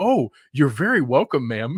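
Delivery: put-on super nice voice. Reading out a viewer's story about thanking people who don't: put-on super nice voice.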